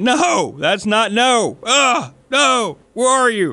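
put-on, very high, drawn-out, panicked freaking-out cry. Recalling seeing a spider, acting out their own past yelling. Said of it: "I just remember yelling".

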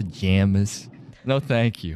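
slow, sour, disgusted, dismissive drawl. Asked how she said it, repeating 'pajamas' with mock disgust. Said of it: "a little disgust in my voice".

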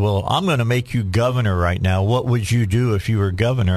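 ordinary delivery

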